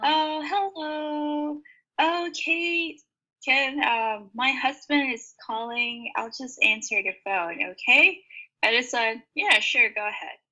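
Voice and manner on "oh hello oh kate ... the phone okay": the sweetest high, unhurried phone voice. A teacher retells a student excusing herself to take a call: imitating a sweet voice. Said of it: "she has the sweetest voice".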